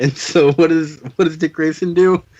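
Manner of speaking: words broken up by laughing throughout. Recapping a ridiculous scene from a comic book, laughing while talking. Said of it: "I'm laughing too hard".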